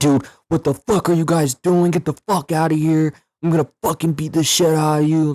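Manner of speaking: very high-pitched, enraged, furious yell. Retelling how a homeless man reacted when they opened his door, imitating an angry man. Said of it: "he gets really mad".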